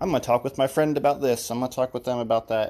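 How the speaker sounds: normal talking voice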